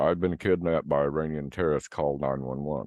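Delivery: ordinary talk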